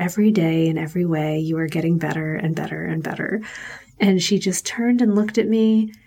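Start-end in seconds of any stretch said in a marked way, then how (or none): 0.0-3.4 imitated whisper. Retelling putting a child to bed, close beside her: retelling a whisper. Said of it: "I whispered to her".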